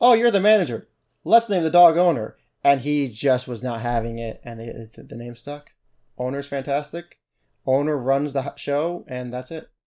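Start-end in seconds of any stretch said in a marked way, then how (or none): 0.0-2.4 high-pitched, loud, excited voice. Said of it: "It's like".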